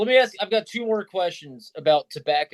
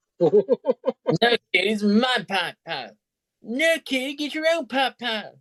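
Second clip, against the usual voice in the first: high, cartoonish kid voice, pitched up; 6 semitones higher than usual. Joking about a pipe with others: Cartman voice. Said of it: "I needed a Cartman voice in there".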